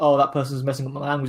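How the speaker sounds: usual speaking voice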